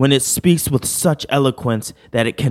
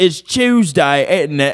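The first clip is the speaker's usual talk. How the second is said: put-on British accent, higher pitch; 4 semitones higher than usual. Reading "British people be like" memes aloud: mock British accent. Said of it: "British people be like".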